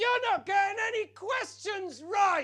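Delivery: mock enraged child's shriek, very high. Retelling how an angry young girl in the front row screamed: imitating a screaming angry girl. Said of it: "she screams at me".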